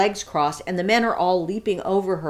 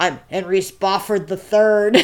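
put-on little boy voice, louder; 5 dB louder than usual. Retelling a funny bit, the speaker quotes a ten-year-old in his little-boy voice. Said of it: "he's got a voice like this".

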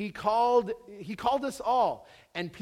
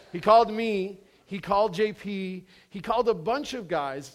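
ordinary delivery

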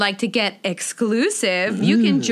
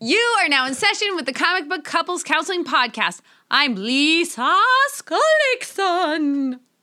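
put-on, high, spooky host voice, one word drawn out; 7 semitones higher than usual. Redoing the show intro after forgetting to: put-on spooky voice. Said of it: "Was that spooky?".

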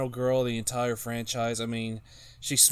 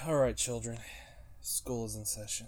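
bored, reluctant, unwilling teacher voice; 8 dB quieter than usual. Asked for his top five, he opens as a bored substitute teacher. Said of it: "You sound like the substitute teacher that really doesn't want to work today".

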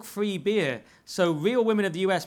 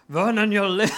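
put-on Scottish accent, higher pitch and louder; 2 semitones higher, 5 dB louder than usual. Having a go at the accent after being asked, the speaker quotes Mel Gibson: bad Mel Gibson impression. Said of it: "Mel Gibson's like".

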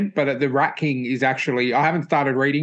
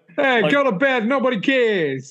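put-on New York accent, pitched way up; 10 semitones higher than usual. Imagining someone popping their head out to yell at a rooftop screamer, New York accent. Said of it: "in this New York accent".

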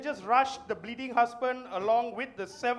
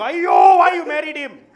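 very loud, drawn-out scolding cry; 4 semitones higher, 14 dB louder than usual. Imitating the guy's mother scolding him: imitating the guy's mother. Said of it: "The guy's mother is like".

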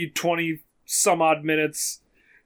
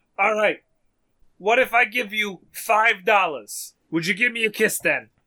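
put-on thick, heavy old New Yorker accent, loud and calling; 4 semitones higher than usual. Retelling what the old man yelled at them next, heavy New York accent. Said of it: "heavy, heavy New York accent man yelling".

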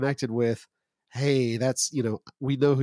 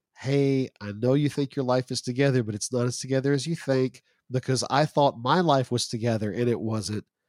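usual speaking voice

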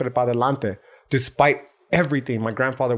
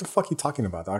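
mocking, dismissive tone, soft and quick; 4 semitones lower, 7 dB quieter than usual. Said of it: "in a very dismissive manner".

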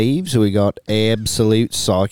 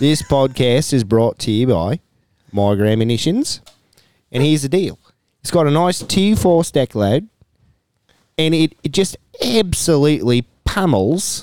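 full-on Australian accent; 4 semitones higher than usual. Doing the podcast's sponsor read on request, full Australian accent. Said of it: "could you do our my grad in a full Australian accent?".

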